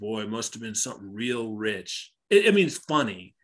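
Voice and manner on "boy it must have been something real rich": put-on smug, all-too-pleased, hushed tone. Speaker recounts Leland waltzing in after what happened to Hank, mock-smug Leland voice. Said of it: "waltzes in all smugly and is like".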